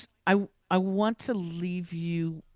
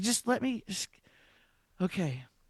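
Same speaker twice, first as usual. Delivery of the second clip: acted-out scared, terrified, halting, stop-start speech; 3 semitones higher, 5 dB quieter than usual. Retelling driving out of the rental car place: imitating own terrified self. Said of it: "I was terrified".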